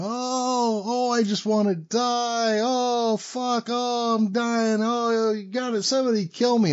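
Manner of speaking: put-on, very high, very slow, anguished wail. Speaker retelling another man being brought in beside him, imitating a man yelling. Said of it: "I can hear him yelling as he's coming in".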